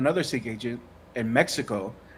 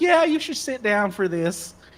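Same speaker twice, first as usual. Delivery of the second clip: put-on Southern Tennessee accent in a higher, ladylike pitch; 8 semitones higher than usual. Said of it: "little Southern lady from Tennessee".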